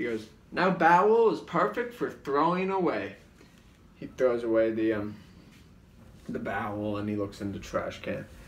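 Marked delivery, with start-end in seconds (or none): 0.5-3.1 loud, pitched-up infomercial announcer voice. Recounting a scene they made, quoting its announcer: Bob Odenkirk infomercial voice. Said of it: "infomercial voice for most of them".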